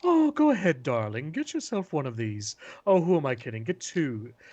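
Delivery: put-on coaxing, sultry British accent. Describing how a video game performer does her sales pitches, in her sultry British accent. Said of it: "her sultry British accent".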